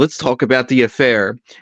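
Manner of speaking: ordinary talk, nothing marked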